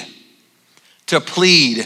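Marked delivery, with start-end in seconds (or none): 1.1-1.9 "plead" stressed, set apart after a pause. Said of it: "It's to plead".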